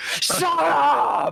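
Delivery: very high, raw, furious shriek, stretched upward. Voicing a girl turning on a player character: screaming. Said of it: "just screaming at you".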